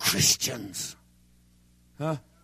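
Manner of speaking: mock gritted-teeth delivery. Speaker acts out how others said the word, quoting through gritted teeth. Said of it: "They said it through gritted teeth".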